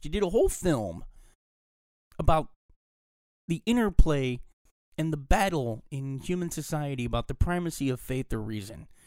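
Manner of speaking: high, hurt, let-down, disappointed ranting voice. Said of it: "I said that like I'm really disappointed and hurt by the movie".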